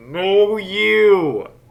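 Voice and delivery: high far-carrying call with "you" stretched. Answering the booming voice, the player cups hands and screams. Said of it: "cup my hands and scream".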